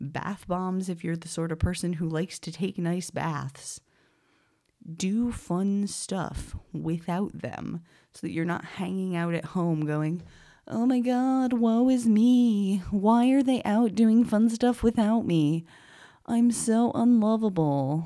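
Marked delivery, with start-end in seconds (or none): 10.7-18.1 put-on, high, loud, sorrowful lamenting voice. Speaker acts out someone left home while friends have fun; mock-sad voice. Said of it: "This is my sad voice".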